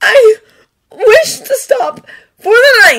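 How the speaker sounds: very high, loud, choking tearful sobbing. The narrator voices Merlin, who keeps crying, answering Arthur: choking on a sob. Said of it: "He jokes on a sob".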